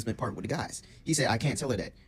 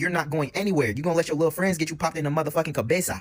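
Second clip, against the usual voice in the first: fierce, scolding, shouting tirade; 5 semitones higher, 4 dB louder than usual. Retelling a girlfriend yelling from the back: imitating her yell. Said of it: "she yells from the back saying".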